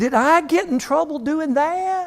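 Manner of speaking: put-on Southern accent, pitched very high. Riffing on an old catchphrase, in a Southern accent impression. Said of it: "That's a Southern impression".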